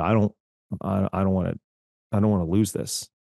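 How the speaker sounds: speaking very quietly. Retelling what the bookkeeper said about the company: imitating someone speaking very quietly. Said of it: "she very quietly said".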